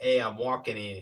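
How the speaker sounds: put-on New York accent. Trying out how to sound like a New York person, in a fake New York accent. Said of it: "How do you New York?".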